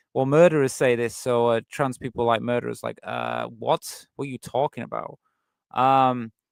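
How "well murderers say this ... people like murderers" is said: ordinary delivery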